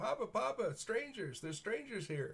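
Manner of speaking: put-on very high, piping little-boy calling voice. A boy runs down the hill toward approaching strangers, piping young boy voice. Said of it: "you hear the piping voice of a boy".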